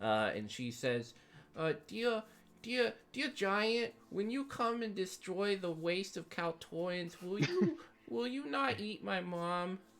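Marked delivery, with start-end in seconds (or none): 1.6-9.8 put-on very high small girl voice. Voicing a frightened eight-year-old girl pleading with a giant: eight-year-old girl voice. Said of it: "eight-year-old Kaltoran runs up, like, this little girl".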